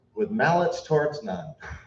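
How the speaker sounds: ordinary delivery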